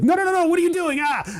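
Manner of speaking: very high-pitched put-on ghost voice. Acting out a ghost being beaten up in a game idea: voicing a ghost. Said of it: "the ghosts will be like".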